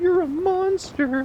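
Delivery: very high-pitched cartoon-character voice. Showing the best voice one can do: a Gingerbread Man voice. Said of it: "Best voice I can do is the you know, the gingerbread man from Shrek".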